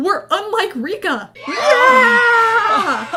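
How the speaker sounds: loud, high, drawn-out triumphant cheer.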